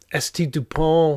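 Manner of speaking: terrible put-on French accent and pronunciation. Saying a name aloud, with a bad French accent. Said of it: "I love my French accent".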